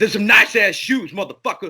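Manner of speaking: fake hostile, mock-aggressive delivery. Recalling giving compliments to strangers while driving past, mock-aggressive compliment. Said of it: "I'd say it in an aggressive tone".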